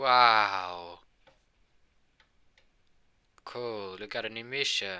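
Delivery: loud, very slow, unenthusiastic, sarcastic drawn-out wow. Narrating a character's reply after being asked to sound more enthusiastic, sarcastic and ironic. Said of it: "he was just so freaking sarcastic and ironic".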